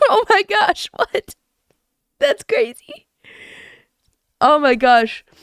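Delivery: teary voice, speaking through tears. Talking to viewers on stream, crying. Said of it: "I'm crying".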